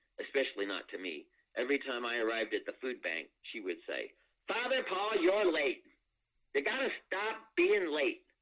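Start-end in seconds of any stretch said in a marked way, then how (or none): 4.5-8.2 acted-out, shrill, very high voice at full volume. Recalling what a woman said whenever the speaker arrived at the food bank, Mary at full volume. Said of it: "say anything that came to her head at full volume".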